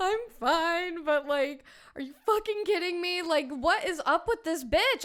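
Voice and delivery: high-pitched, tearful, crying a little while talking. Retelling a phone call after a scare: retelling crying on the phone. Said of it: "crying a little bit".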